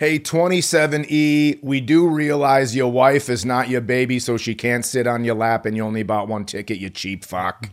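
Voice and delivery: put-on New Jersey smoker voice. Doing a mock personal announcement to seat 27E, in a New Jersey smoker voice. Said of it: "this New Jersey smoker impression".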